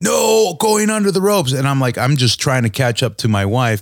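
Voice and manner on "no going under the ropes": very high, high-pitched scolding yell. Retelling how a lady in the line scolded him for going under the rope, retelling a lady yelling. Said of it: "the lady starts yelling at me".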